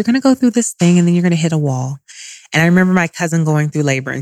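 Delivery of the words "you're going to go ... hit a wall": very sweet, loving, airy voice. Retelling what a doula said at a prenatal appointment: imitating Arlen's sweet voice. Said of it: "she has a very sweet voice".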